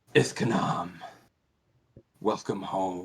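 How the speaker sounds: low, deep, rumbling growling voice. Narrating a scene and voicing an unseen speaker: deep, growling voice. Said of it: "you hear a very sort of deep, growling voice".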